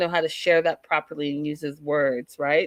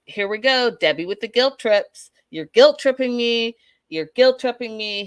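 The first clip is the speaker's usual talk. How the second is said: put-on angry outburst, higher and louder; 6 semitones higher, 4 dB louder than usual. Retelling a fight where he accuses her of guilt trips: imitating someone getting mad. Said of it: "he gets mad at that".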